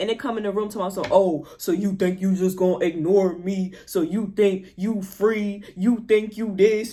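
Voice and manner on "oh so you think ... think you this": huge, very deep, mad demonic voice. Retelling a big presence that came into the room: very deep voice. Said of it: "the voice mad deep".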